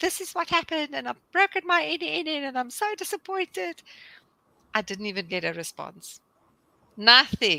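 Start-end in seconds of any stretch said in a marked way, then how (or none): 0.0-3.8 upset, tearful, high-pitched crying voice. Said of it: "I sent David a mail or WhatsApp crying".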